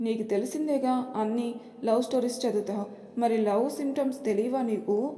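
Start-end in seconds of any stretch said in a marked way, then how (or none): none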